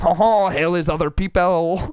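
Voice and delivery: mock French philosopher voice. Joking that a friend's dad sounds like a mock French existentialist. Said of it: "Is your dad a French existentialist?".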